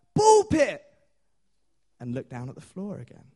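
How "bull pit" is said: very high, loud crowd shouting in unison. Retelling a story of a room reacting: imitating a crowd shouting. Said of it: "they all look up and they shout".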